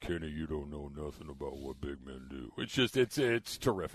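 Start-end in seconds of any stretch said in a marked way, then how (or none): 0.0-2.5 very low, hushed, soft, deep rumbling mumble. Quoting a line to Kenny about big men: Shaq impression, mumbling deep voice. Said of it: "the mumble, the deep voice".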